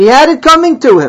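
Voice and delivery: high, loud, self-righteous retort. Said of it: "you self-righteously can say".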